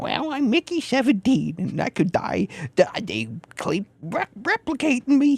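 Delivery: nasally New York voice, pitched high, pushed through nose. Talking with others about a Bong Joon-ho movie, do a nasally Mickey 17 impression. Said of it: "the same nasally tone that I'm doing".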